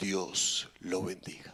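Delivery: deep voice, hushed, almost whispered. Retelling what a man said as he handed over the bag, in a deep voice. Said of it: "le dice con esa voz profunda".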